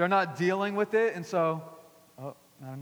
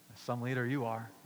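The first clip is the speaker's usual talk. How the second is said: put-on sarcastic mutter, much quieter; 6 semitones lower, 6 dB quieter than usual. Acting out what a passive-aggressive woman mutters at the leader; mock-sarcastic, under breath. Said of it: "Like a little sarcastic".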